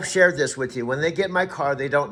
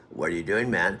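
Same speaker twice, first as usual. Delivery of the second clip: very low, easygoing, laid-back slacker dude voice; 8 semitones lower, 5 dB quieter than usual. Showing what the character he calls his sub dude sounds like: sub dude voice. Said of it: "He sounds like this".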